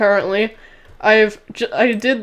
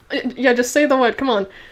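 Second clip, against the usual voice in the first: plain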